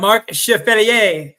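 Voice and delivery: accent of a French Canadian. Saying a person's name while trying to sound French Canadian: French Canadian accent. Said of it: "I'm trying to sound like a like a French Canadian when I say it".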